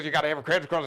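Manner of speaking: rapid announcer delivery. Imitating a car-ad announcer reading the fine print, fast fine-print announcer voice. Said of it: "the announcer is talking real fast like this".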